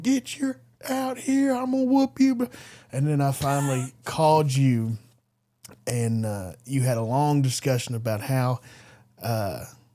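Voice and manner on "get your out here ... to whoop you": mock, very high, furious, all-out screaming. Retelling screaming at a coworker during a front-yard tussle, retelling a scream. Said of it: "just screaming".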